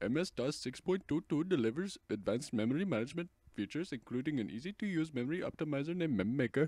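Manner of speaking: Indian-accented voice. Reading out a software message in a put-on indian accent. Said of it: "what type of accent should I read it in? Uh, Indian accent?".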